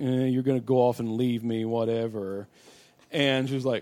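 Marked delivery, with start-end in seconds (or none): 0.0-2.5 acted-out dismissive, brushed-off tone. Describing how a woman answers a man asking her to wait, mock-dismissive. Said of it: "she's so dismissive of it".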